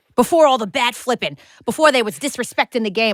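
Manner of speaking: put-on old-school Boston accent. Joking about old-school baseball and the game's past: put-on boston accent. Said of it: "I keep going into a Boston accent".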